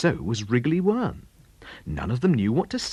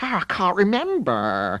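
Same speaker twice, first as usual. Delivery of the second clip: grumbly, grousing, complaining tone; 4 semitones higher than usual. Reading a story aloud, a slug answers a question: grumbling. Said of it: "grumbled Sloppy Slug".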